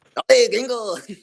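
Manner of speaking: very high-pitched, loud cartoon-style shout. Reacting to a friend being compared to Speedy Gonzalez: Speedy Gonzalez voice. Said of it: "Speedy Gonzalez".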